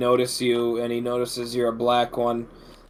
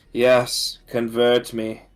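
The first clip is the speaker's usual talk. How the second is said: strained, utterly bored, going-through-the-motions voice. Describing a game scene, quoting the woman on the bed, imitating a strained, extremely bored voice. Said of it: "in a strained, extremely bored voice saying".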